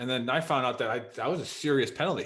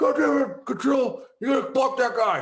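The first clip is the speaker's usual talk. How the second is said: put-on yelling voice, higher and louder; 12 semitones higher, 6 dB louder than usual. Retelling a youth football coach yelling at him: imitating a coach yelling. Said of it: "Coach starts yelling at me".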